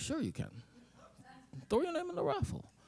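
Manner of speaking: soft, breathy near-whisper. Retelling what a man said at a charity raffle: Jesse impression. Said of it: "am I gonna do a Jesse impression? I am".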